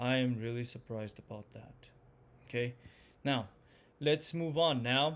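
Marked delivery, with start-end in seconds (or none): 0.0-1.7 disappointed tone, pitch falling from midway. Speaker demonstrating intonation for different feelings, disappointed, falling intonation. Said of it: "disappointed, starts a little bit halfway and then it just goes all the way down".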